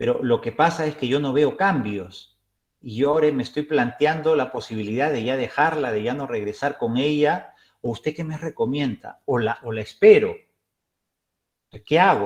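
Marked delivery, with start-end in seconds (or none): none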